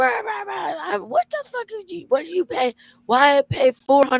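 very high, shrill, loud screaming rant. Retelling how a lady came out at the speaker; imitating a woman screaming. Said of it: "she's screaming".

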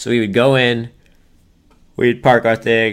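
words bent by talking through a yawn. Late at night, describing going to a drive-in theater, yawning while talking. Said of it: "sorry, I'm yawning".

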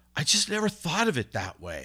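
exasperated, fed-up tone. Retelling how a man finally answered relentless questioning, imitating someone frustrated. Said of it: "he gets frustrated".

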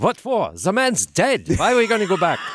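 acted, high, screamed voice in German accent. Retelling how the captain answered a whispered question, screaming in a German accent. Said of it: "he literally screams out in that German accent".

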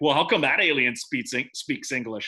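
ordinary delivery

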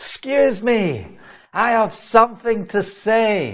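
put-on projected voice, Scottish accent. Retelling standing up to interrupt the preacher before thousands, retelling a shout. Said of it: "and I'm having a shout".

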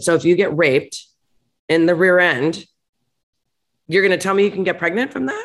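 plain

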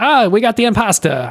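put-on terrible Brooklyn accent.

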